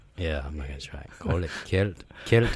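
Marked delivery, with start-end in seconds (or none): 1.2-2.6 attempted, put-on Scottish accent. Asked to try saying a word in an accent, scottish accent. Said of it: "can you do it in a Scottish accent?".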